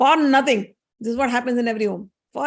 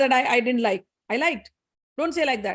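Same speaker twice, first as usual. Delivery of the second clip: usual speaking voice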